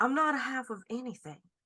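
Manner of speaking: put-on southern drawl. Repeating a character's reply in a game with a southern drawl. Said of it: "I have to get my southern drawl back on".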